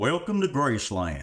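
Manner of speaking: put-on very old, elderly man's narrating voice. Describing a Graceland audio tour, the speaker imitates the guide in an old man's voice. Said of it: "like this old old guy's voice".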